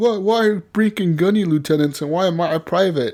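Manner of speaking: angry, aggrieved tone. Retelling a friend's complaint about his rank: imitating Destro mad. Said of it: "he was mad that Brink was".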